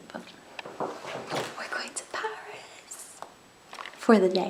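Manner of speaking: very quiet, slow, hushed whisper. Greeting the viewers at five in the morning while someone sleeps: whispering. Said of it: "I'm trying to whisper 'cause Will's asleep".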